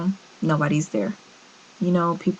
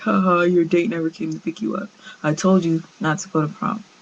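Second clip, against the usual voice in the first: put-on derisive laugh. Retelling a father's reaction: imitating father laughing mockingly. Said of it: "he starts laughing like".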